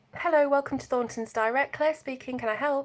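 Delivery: polished telephone voice. Speaker recalling answering calls at Thornton's years ago, in a telephone voice. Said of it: "the telephone voice".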